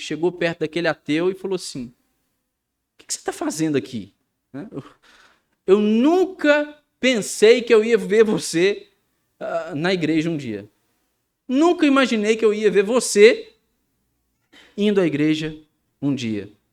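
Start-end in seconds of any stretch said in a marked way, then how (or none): 1.9-16.5 loud, swooping, biting, mocking sarcasm. Retelling what a church member said to an atheist at the burning church, retelling a sarcastic tone. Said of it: "em um tom sarcástico".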